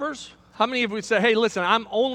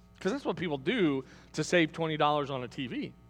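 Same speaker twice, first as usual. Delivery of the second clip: plain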